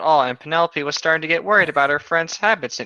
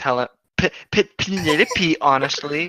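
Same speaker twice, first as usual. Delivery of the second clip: normal talking voice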